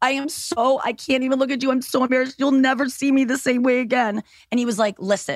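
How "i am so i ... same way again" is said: acted-out sobbing words, pitched higher. Retelling what she said to him in the shower, acting out her own sobbing. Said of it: "I'm sobbing".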